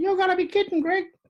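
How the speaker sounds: very high, almost womanly, disbelieving tone. Speaker recalls a player protesting after a penalty call; imitating Blocker's very high voice. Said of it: "he had this sort of very high voice".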